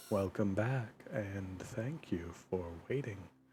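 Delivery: very quiet, hushed, barely audible ASMR voice. Welcoming listeners back after a pause, in a very quiet voice. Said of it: "I have no clue if you can even hear me when I'm talking like that".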